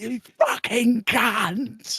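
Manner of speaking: furious, high-pitched raging yell, last word stretched. Retelling a road clash with another driver, retelling an angry shout. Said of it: "I'm sh- shouting at my fucking top of my voice".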